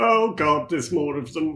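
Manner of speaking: loud yell in a put-on character voice. Reacting in character as more enemies appear: yelling in character. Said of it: "I'm going to yell".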